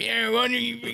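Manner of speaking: very high voice. Retelling own words to a barista, sounding like Logan. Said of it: "You sound like Logan right now".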